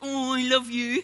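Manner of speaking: put-on mushy, doting, gushing coo. Recalling greeting the dog in the morning: acting out a soppy voice. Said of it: "in my soppy voice".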